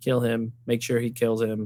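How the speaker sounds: put-on very low, flat deadpan monotone, no inflection. Mocking an actress's line delivery, imitating her flat monotone. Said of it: "She delivers every line like very monotone".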